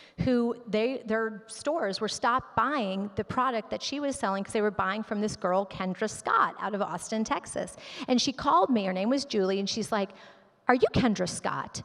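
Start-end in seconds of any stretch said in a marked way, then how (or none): 10.7-11.8 acted pushy, aggressive, confrontational challenging tone. Retelling a phone call from a showroom owner: imitating an aggressive caller. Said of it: "Kind of aggressive".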